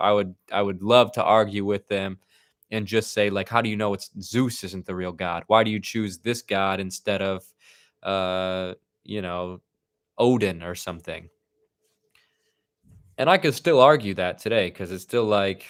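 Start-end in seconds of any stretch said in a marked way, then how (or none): none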